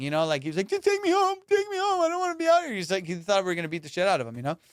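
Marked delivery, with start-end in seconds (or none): 0.7-2.7 very high, bawling, pleading voice. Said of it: "he just started bawling".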